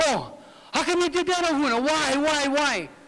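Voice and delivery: slow, nagging, accusing tone. Retelling how people questioned him after the last show: imitating an accusing questioning tone. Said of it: "Where's that tone of voice from you now?".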